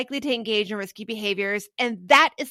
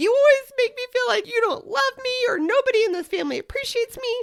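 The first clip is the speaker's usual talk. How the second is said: very high voice, holding back tears; 13 semitones higher than usual. Giving an example of how one comes into a family conversation, fighting back tears. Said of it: "in a voice like where I'm fighting back".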